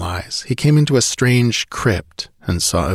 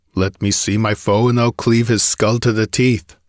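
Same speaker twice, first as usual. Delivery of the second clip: ordinary delivery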